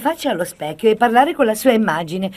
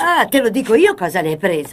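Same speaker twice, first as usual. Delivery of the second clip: ordinary delivery, nothing marked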